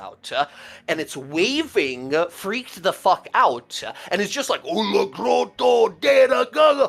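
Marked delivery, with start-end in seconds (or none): 4.6-6.9 frantic, rough, high, drawn-out troll yelling. Narrating a scene to players, voicing a two-headed troll: troll yelling in giant. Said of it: "He's yelling".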